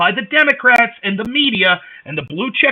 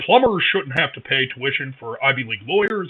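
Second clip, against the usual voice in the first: very deep, soft, lowered voice; 9 semitones lower, 6 dB quieter than usual. Doing an impression in a political comparison: deep Dr. Oz voice. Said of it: "I'll do a deeper voice for Doctor Oz".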